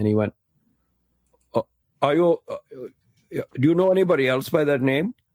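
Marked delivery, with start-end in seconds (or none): 2.0-5.1 put-on Indian accent, higher. Retelling a conversation with a man from India, doing his voice: put-on Indian accent. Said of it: "I'll do his voice".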